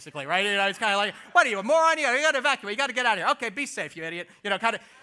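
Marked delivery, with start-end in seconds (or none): 1.3-4.3 Jersey politician voice. Imitating how a governor scolds people to evacuate: Governor Christie impression. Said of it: "He starts talking like Governor Christie".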